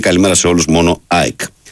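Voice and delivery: ordinary talk, nothing marked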